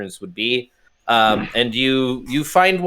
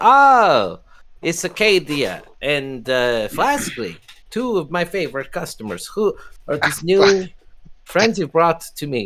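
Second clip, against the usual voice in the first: put-on weak, pitched-up Greek accent, stretched "oh" sound; 5 semitones higher than usual. The narrator voices the bartender Alexi greeting two customers, in an attempted Greek accent. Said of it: "I can't do a Greek accent. This is my best".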